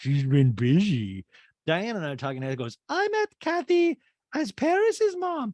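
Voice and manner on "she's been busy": out of the side of mouth, slower. Retelling a woman's aside at a family greeting, out of the side of mouth. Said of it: "out of her side mouth goes".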